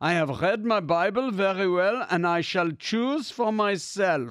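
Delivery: put-on German accent throughout. Telling how Handel answered those proposing other texts, Handel's German accent. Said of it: "in probably his finest German accent".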